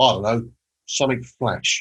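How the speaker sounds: put-on thick London accent, laid on. Speaker retells asking Tony a question and quotes his reply: Tony's broad London accent. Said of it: "in his broad London accent".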